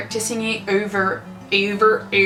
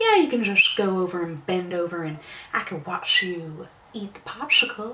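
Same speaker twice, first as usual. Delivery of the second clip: put-on long whistling Southern drawl, quieter; 2 semitones lower, 5 dB quieter than usual. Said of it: "talk in his long southern draw ... he has this little whistle when he talks".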